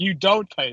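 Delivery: ordinary delivery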